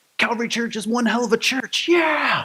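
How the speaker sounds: put-on child's voice, cheering.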